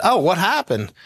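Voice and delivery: ordinary talk, nothing marked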